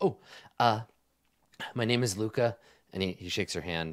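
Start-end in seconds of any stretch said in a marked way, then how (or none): 0.0-2.6 nervous, slower, with a nervous cough. A man being talked about introduces himself, nervous, with a cough. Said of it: "he coughs kind of nervously and says".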